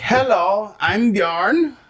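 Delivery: put-on Icelandic-accented speech. Joking with another speaker about dating a cousin, play a man introducing himself in an Icelandic accent. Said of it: "that's a good Icelandic accent".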